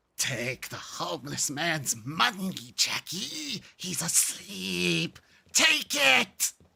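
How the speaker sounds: rough, angry evil voice, swooping pitch. Quoting lines from the Darkness 2 villain: The Darkness impression, angry evil. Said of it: "such a bizarre fucking voice of just, like, pure, angry evil".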